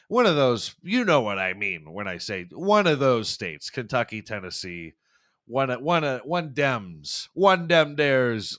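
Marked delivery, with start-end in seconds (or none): 6.2-8.5 slow, clumsy, bad attempted Jamaican accent. Listing states while telling of someone's arrest, in an attempted Jamaican accent. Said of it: "That was me attempting a Jamaican accent".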